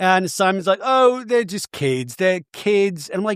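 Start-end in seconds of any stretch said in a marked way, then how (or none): 0.8-3.1 put-on Australian accent, done well. Retelling what Simon said about his kids: Simon impression, Australian accent. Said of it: "really good Australian accent that you just did".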